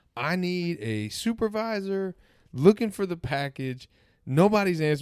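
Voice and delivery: mock loud, high yell. Retelling how a post office clerk yelled into the phone: imitating a clerk yelling into a phone. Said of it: "yelling into this phone".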